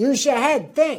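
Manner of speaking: Bronx accent, think said tink with dental t. Speaker demonstrating th turning into a dental t, in a New York accent. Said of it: "Think becomes think".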